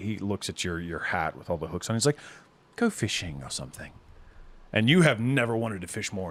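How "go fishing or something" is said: syrupy, honey-sweet, coaxing sweet-talking voice. Voicing a character who tells a player to go off: honey-sweet voice. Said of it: "he speaks to you with words like honey".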